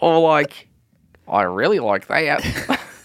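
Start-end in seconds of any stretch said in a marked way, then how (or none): 1.3-2.8 clumsy, terrible New Zealand accent, slow. Showing how people there talk, the speaker tries a terrible new zealand accent. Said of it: "That's a terrible New Zealand accent".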